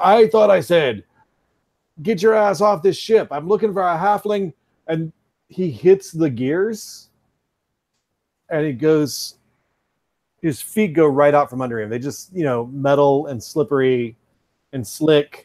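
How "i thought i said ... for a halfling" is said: furious, high, angry yell. Voicing a character storming into the room at a player: yelling angrily. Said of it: "he's yelling and he's pointing at you".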